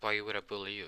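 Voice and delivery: ordinary delivery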